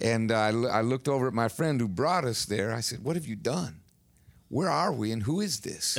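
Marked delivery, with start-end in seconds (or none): none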